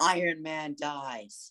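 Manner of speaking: mildly called out, imitated shout. Retelling someone in the theater shouting out the ending: imitating someone shouting. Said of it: "They just shouted".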